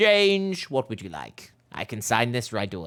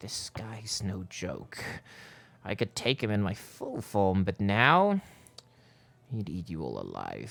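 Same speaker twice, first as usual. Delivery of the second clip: secretive, hushed half-whisper, close up; 4 dB quieter than usual. A game master voices a half-whisper players hear in their ear, half-whispering. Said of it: "you hear like a whisper in your ear".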